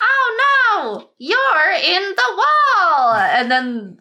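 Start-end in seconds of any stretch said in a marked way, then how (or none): 0.0-3.1 listless, very high, very drawn-out slow screech. Speaker imitates how she delivers a line; imitating bored screeching. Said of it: "she says it like she's bored that she's screeching".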